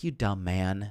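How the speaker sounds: condescending, disapproving, dismissive tone. Retelling two characters shaking their heads at a man: head-shaking put-down. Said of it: "shake their head like".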